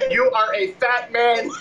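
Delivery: robotic speech. Retelling what your daughter said to you at Applebee's, in a robot voice. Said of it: "She said it like a robot".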